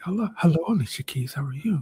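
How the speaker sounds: soft, quiet half-whispered delivery. Retelling a backstage meet and greet, imitating own past half-whisper. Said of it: "got me whispering right back to her".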